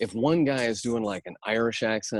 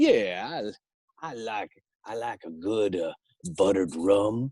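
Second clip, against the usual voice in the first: put-on Louisiana man's voice with Louisiana accent. Someone recalls voicing a weasel with their go-to voice; Louisiana accent. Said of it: "fell back on Louisiana guy".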